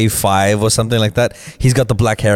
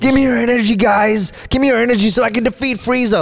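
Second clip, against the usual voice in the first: very high, heroic, rousing voice. Describing a long scene, imitating Goku asking for energy. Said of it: "Goku standing there with his arms up".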